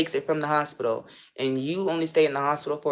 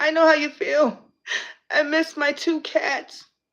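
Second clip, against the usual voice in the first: very high, weepy, blubbering put-on crying voice; 12 semitones higher than usual. Retelling what a woman said as she started crying instantly, imitating someone crying. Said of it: "she starts crying instantly and goes".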